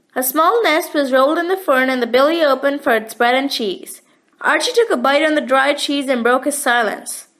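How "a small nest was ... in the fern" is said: usual speaking voice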